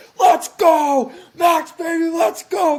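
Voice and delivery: wild, very loud, high, drawn-out scream. Retelling watching qualifying alone in a bathroom: imitating himself screaming. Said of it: "I'm in there just screaming".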